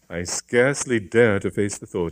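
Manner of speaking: plain reading voice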